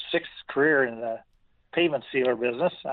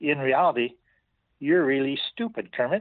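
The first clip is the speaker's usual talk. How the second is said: halting, slightly broken non-native English. Husband retelling what his wife told him, in slightly broken English. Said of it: "in her little broken English a little bit".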